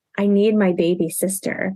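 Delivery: put-on sad child voice, about to cry. Retelling her son's plea at the car, imitating a sad child about to cry. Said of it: "he looks so sad and, like, just about to start crying".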